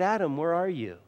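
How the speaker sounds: put-on heartbroken father voice. Preacher acting out God calling to Adam: God as a broken-hearted father. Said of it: "I don't think it was a harsh voice".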